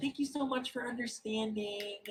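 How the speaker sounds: high, polite customer service voice. Acting out a server sending a guest back toward the stairs, in a customer service voice. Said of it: "Customer service voice".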